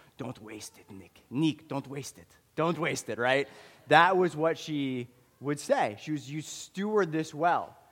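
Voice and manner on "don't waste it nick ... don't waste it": put-on heavy, thick, laid-on Ukrainian accent. Recalling a woman giving him money, the speaker quotes her refrain in a thick ukrainian accent. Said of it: "in a thick Ukrainian accent".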